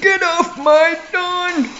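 put-on very high, slow elderly man voice. Joking about grandmothers watching, pretending to be an old man: put-on old man voice. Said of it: "that's an old man".

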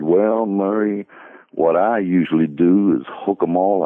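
lazy, easygoing, laconic southern drawl of few words. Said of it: "in his real sort of laconic southern drawl".

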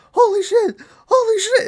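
really high voice shooting up, drawn out. Retelling an actor's reaction in a movie scene, really high voice. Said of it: "And his voice gets really high".

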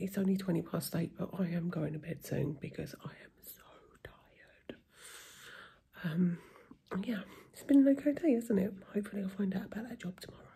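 speaking softly. Talking quietly at night because a husband is in bed: talking quietly. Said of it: "I'm talking real quiet 'cause my husband's in bed".

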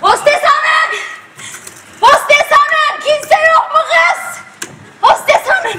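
high, drawn-out shouting calls. A passenger on a plane keeps calling for the stewardess: shouting for the stewardess. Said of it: "neden bağırıyorsunuz?".

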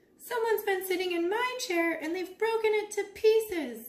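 distressed, high, upset crying out. Baby Bear speaks after Mama Bear as the bears look around, crying out. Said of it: "cried Baby Bear".

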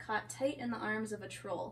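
ordinary talk

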